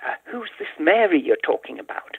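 meek, sheepish, hesitant delivery. Retelling a student's question after class: imitating a sheepish student. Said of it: "very sheepishly said".

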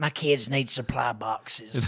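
hoarse put-on voice.

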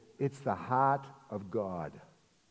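low, borrowed, put-on Boston accent. Retelling a conversation, quoting the other person's answer in a Boston accent. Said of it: "here's her boston accent speaking".

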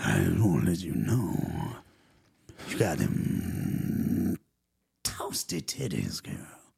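low, creaky, sleazy creepy voice. Joking about what guys say to women, a speaker does a creepy put-on voice. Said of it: "the voice that I just did".

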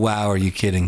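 ordinary talk, nothing marked

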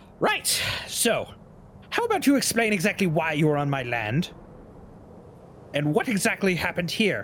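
character voice of an elder halfling woman. A game master speaks as the halfling woman walking up to the party: older halfling woman voice. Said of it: "The halfling woman, who is older, / The halfling woman, who is older, about a little shorter than Theory, nice clothes, slightly wet now, walks up. / The halfling woman, / The halfling woman, who is o".

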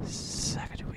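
gentle ASMR whispering.

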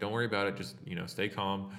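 mock calm, reassuring voice. Retelling what a comic character keeps saying while shooting people, retelling a reassuring voice. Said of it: "he constantly keeps talking in a very like reassuring voice".

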